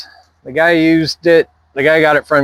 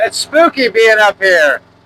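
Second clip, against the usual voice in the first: loud, high-pitched yell. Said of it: "I don't know why I'm yelling".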